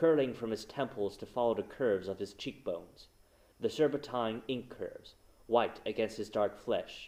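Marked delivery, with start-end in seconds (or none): none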